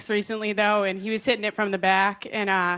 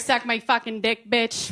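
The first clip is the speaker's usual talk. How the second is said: thick, exaggerated Boston accent. Joking about when the accent shows: thick boston accent. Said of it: "unless I say certain words".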